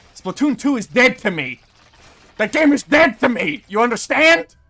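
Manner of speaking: screaming at top of lungs, very loud, high-pitched. Talking to another person about a game; screaming. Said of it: "Why are you screaming at me?".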